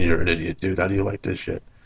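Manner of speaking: normal talking voice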